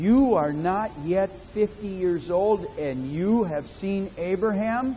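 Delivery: acted, mock-accusing tone of voice. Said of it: "with an accusing voice said to him".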